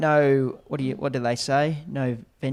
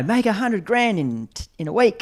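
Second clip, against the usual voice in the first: put-on American accent, much higher; 8 semitones higher, 3 dB louder than usual. Speaker, asked to do an American accent, continues the bit; put-on American accent. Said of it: "you do an American accent".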